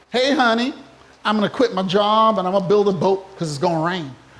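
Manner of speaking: silly put-on American accent. Speaker voicing Noah speaking to 'honey' in an imagined Netflix show, silly American accent. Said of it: "what kind of silly American accent is that?".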